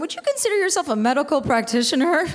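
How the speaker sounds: thick, oozing, dripping sarcasm. Speaker retells her brother's question to her, imitating his dripping sarcasm. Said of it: "dripping in sarcasm".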